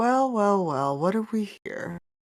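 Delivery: sultry, seductive, amused voice. The game master voices a deity greeting the players' characters: sultry, amused voice. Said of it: "you hear a sultry voice that is very".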